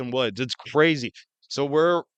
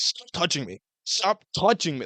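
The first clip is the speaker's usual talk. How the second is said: put-on furious, angry freak-out outburst; 3 semitones higher than usual. Retelling how a man reacted when people pushed him: imitating someone freaking out. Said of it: "freaking out on people".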